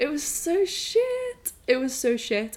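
crying, with high, slow, tearful voice.

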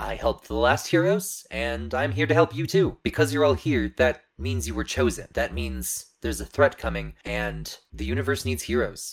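formal, welcoming ai robot voice. A robotic guardian program tells the gathered newcomers they were chosen because a threat is coming, holographic ai guardian robot. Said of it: "almost living looking hologram that is very definitely robotic in appearance. ... the AI that runs this place".

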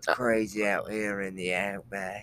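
slow, drawn-out drawl in wildlife-host style. Trying the suggested Steve Irwin voice for the others: Steve Irwin impression. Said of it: "Nice. That wasn't too bad".

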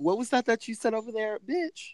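mock taunting, very high pitch.

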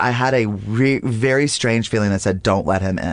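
plain

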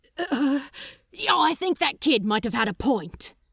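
blurted out of breath. Crowley rushes back into reception and speaks to Aziraphil, announced breathlessly. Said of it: "Crowley announced breathlessly".

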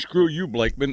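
normal talking voice

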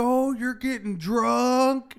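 put-on high, loud, drawn-out, drunk-sounding taunt. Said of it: "he says it so loud".

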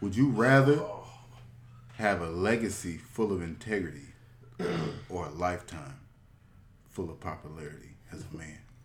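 fake-deep, low, hushed, overly serious mock read. Reading out the last submitted question to the others, reading it deep. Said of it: "He tried to read it deep".

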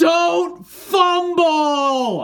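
very high, shrill yell with "fumble" drawn out. Retelling a fan behind him at a game: imitating a fan screaming. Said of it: "the guy behind me just screams".

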